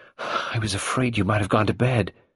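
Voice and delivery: breathless, speaking out of breath. Carol, arriving at Sarah's door after one o'clock, speaks breathless. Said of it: "The latter said breathlessly".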